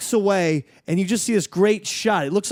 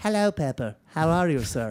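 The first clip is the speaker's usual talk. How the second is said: low, fake blend of Irish, German, English accents; 4 semitones lower, 5 dB quieter than usual. Showing how he usually greets Pepper, put-on mixed Irish-German-English accent. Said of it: "it's my own [name] accent".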